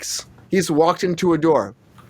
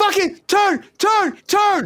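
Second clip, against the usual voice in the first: put-on scream, higher pitched. Retelling a director screaming across a football field: imitating a director screaming. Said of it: "screaming at me across this whole football field".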